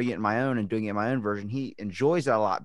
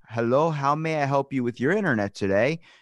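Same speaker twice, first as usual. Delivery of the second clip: put-on Indian accent, higher pitched; 4 semitones higher, 4 dB louder than usual. Acting out a call to internet customer service: imitating an Indian accent. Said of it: "You were about to do an Indian accent".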